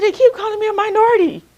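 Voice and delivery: high, loud, tearful sobbing voice. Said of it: "I called my mom in tears".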